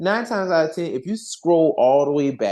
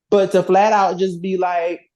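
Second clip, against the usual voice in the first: ordinary talk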